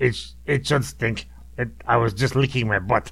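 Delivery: put-on cat voice, quasi-evil, Russian accent. Answering your oldest child for the cat, in its quasi-evil Russian voice. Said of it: "in the cat's voice".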